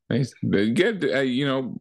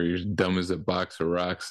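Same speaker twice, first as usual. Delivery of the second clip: normal talking voice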